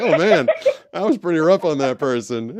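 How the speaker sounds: rueful laugh.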